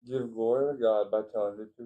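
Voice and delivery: ordinary talk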